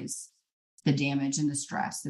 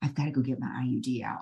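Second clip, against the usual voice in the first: whispered speech; 2 semitones lower than usual. Retelling whispering to her husband in the middle of mass: retelling a whisper. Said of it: "I whispered to him".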